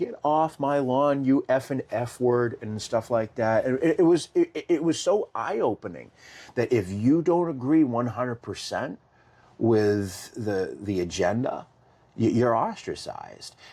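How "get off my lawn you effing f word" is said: play-acted, high-pitched screaming and yelling. Retelling what a person at the door shouted: imitating someone screaming. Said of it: "She starts screaming and yelling".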